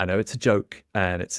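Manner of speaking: ordinary talk, nothing marked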